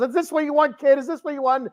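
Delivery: furious, snapping outburst, very high-pitched. Speaker acting out a wrestler who loses and snaps at a crying kid, mock-angry snap. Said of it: "he just snaps".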